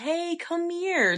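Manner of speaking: creepy, ominous, lilting sing-song call. Retelling a creepy call heard from the next room: imitating an ominous sing-song voice. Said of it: "very ominous, like, sing-songy".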